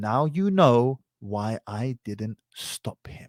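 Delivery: quiet, softly spoken voice. Telling a story about a heckler, retelling a quiet remark. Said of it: "finally said in a quiet voice".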